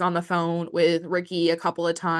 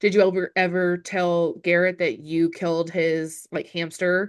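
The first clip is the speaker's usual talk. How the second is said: normal talking voice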